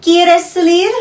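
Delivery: rising question intonation. Demonstrating how spanish intonation turns a statement into a question, question intonation. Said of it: "Do you want to go out?".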